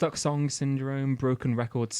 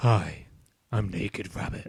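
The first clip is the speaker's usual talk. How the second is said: low character voice, very slow, every word drawn out; 5 semitones lower than usual. Introducing an improvised character to a friend: Kojima character voice. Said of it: "The voice is a Kojima voice".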